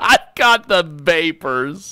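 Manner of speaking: put-on character voice, Southern-sounding. Before moving on to the next guest, repeat your Southern-sounding Cobra Commander impression. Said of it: "My Cobra Commander impression sounds Southern".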